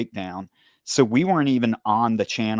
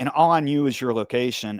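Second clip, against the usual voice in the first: ordinary talk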